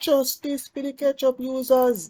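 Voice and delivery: very high-pitched put-on Jamaican accent. Speaker repeats their own sentence in a put-on jamaican accent. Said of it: "That's my Jamaican accent".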